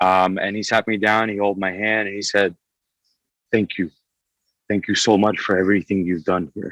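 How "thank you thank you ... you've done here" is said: put-on broken English accent, faster. Retelling a man thanking the speaker while holding their hand, broken english accent. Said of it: "in this very broken English accent".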